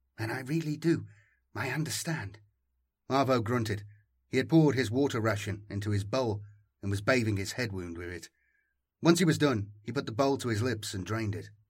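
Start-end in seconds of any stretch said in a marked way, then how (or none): 0.2-2.4 low, soft, hushed, much slower. Zany speaks to Arvo among sleeping companions, keeping her voice low. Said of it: "keeping her voice low".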